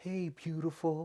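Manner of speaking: soft, high, gentle tone. Retelling how Trump addressed her: imitating Trump, soft tone like to a child. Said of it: "a soft tone, like you would talk to a child".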